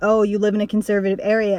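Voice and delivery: ordinary talk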